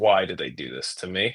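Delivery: long sigh, then weary, despairing, beaten-down groan. Retelling a lapsed fan's reply to the news, after a long sigh: imitating a friend's weary despair. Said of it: "the longest sigh I have heard from this man".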